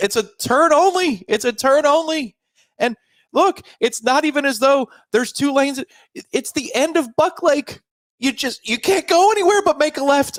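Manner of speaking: very high, heated, argumentative shouting. Two people argue in a car, yelling at each other. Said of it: "Why are we yelling at each?".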